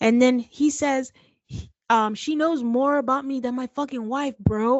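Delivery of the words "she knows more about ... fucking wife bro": worked-up hollering outburst, mildly heated yell. Retelling a heated confrontation, imitating David yelling. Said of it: "Why are you yelling?".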